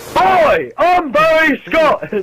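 put-on very high, shrill shouting in an English accent. Show another person how to do the voice, shouting Barry Scott in an English accent. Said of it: "shout in like an English accent".

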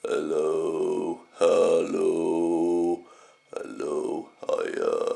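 groggy morning voice. Just got up, testing the voice: groggy morning voice. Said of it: "my voice is a bit kind of morning voice".

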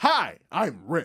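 mock over-eager, loud, overexcited, way too pleased. Retelling how someone introduced himself, imitating Rick's overexcited self-introduction. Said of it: "Why would you say it like that?".

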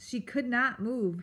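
ordinary delivery, nothing marked

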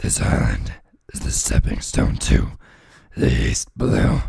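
very low, gurgling, gargly, disgruntled monster growl. Reading a chapter aloud, voicing a character: gargly disgruntled voice. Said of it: "less gargly and disgruntled".

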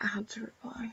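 soft, unvoiced whisper.

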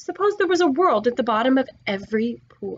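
ordinary talk

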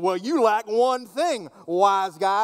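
mocking, needling tone. Reading the exchange one possible way: snarky gotcha Jesus. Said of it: "he was snarky, kind of a gotcha Jesus. And so you can kind of read it that way".

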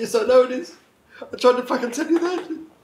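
very high-pitched, tearful, weeping speech. Retelling a call with a man upset by a video: crying while talking. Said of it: "now I'm crying again".

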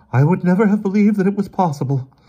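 weary, shaky, trembling, very high-pitched voice. Emerson finally breaks the silence in the living room; weary, voice shaking. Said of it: "He sounded incredibly weary, and his voice shook".

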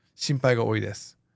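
normal talking voice

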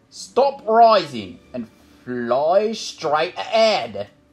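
loud, deliberate shouting, each word spaced out. Narrator reading a character commanding a broom that ignored the other rider, shouted. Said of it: "May shouted".

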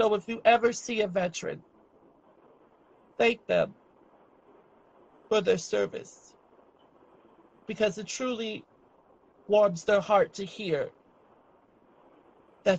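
crying, tearful speech. Addressing veterans in a tribute, crying while speaking. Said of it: "and I'm crying as I'm saying this".

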